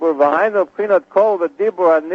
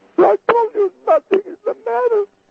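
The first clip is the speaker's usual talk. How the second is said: put-on tearful weeping voice, very high. Acting out a couple's exchange to show emotion in a voice, imitating a crying voice. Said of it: "It's a crying voice".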